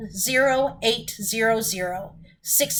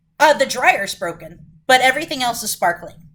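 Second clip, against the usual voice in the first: ordinary talk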